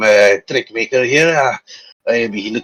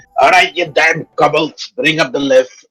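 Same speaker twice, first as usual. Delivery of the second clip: mild, raised dwarf voice, yelling; 4 semitones higher than usual. Voicing a dwarf who calls the kobolds to bring the lift: dwarf screaming. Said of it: "he just screams at".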